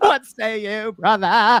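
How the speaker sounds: very high, slow, drawn-out sketch voice. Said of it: "in Saturday Night Live, where they were doing the Bee Gees".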